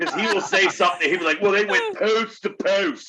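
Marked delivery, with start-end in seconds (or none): 1.4-3.1 put-on local Baltimore accent pronunciation. Retelling a friend's line in his Baltimore accent: imitating Ray's Baltimore accent. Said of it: "Baltimore accent, all you have to do is listen to Ray".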